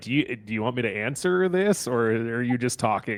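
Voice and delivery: ordinary talk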